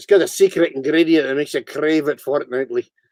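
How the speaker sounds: put-on Scottish accent. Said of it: "you have quite a cool Scottish accent".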